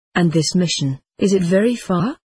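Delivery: ordinary delivery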